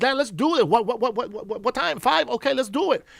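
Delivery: mock raring-to-go, can't-wait excitement, pitched high. Retelling saying yes to dad's invitation, acting out own fired-up eagerness. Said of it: "And I was on fire".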